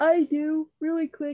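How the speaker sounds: very high-pitched words spoken while yawning. Answering a question about anything final to bring up, yawning while talking. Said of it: "Sorry, I'm yawning".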